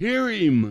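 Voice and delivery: very loud, booming, bellowed shout. Recalling a man bellowing while the speaker preached, retelling a loud bellow. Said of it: "he bellowed out in his loud voice".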